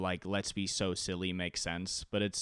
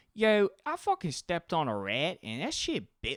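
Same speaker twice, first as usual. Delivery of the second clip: put-on Philly accent with swooping intonation; 9 semitones higher than usual. Describing how they expected people in philadelphia to talk, imitating a philly accent. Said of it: "talk like that".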